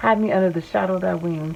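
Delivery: ordinary talk, nothing marked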